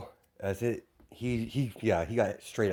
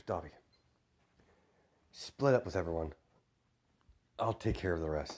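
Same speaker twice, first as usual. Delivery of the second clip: soft, hushed half-whisper with no voice; 3 semitones lower, 5 dB quieter than usual. Storyteller voices Ezekiel half-whispering to Dobby; half-whisper. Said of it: "as he whispers".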